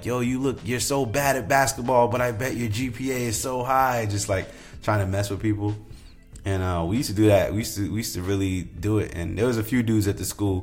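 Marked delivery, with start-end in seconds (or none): 0.0-4.1 put-on taunting yell, higher, slower. Recalling messing with people at school, retelling yelled taunts. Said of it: "remember just yelling at people like".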